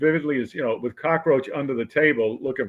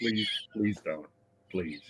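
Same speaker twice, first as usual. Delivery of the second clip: acted, low, hushed, begging pleading; 6 semitones lower, 9 dB quieter than usual. Retelling how the man saluted on base begs him to stop, imitating someone pleading. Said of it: "and he's like".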